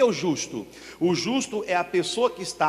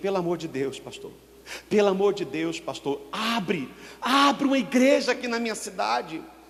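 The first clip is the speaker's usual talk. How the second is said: put-on desperate, tearful pleading through sobs; 2 semitones higher than usual. A pastor retells a woman begging him to open a church: imitating a desperate plea. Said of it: "ela entrou meio que em desespero".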